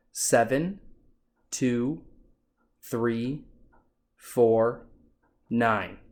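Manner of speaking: slow, evenly spaced digits, voice falling on last nine. Demonstrating how to read a digit trial aloud, voice dropping at the end. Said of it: "you want to drop your voice at the end".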